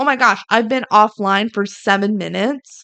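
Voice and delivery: ordinary talk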